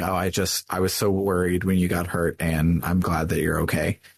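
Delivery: ordinary delivery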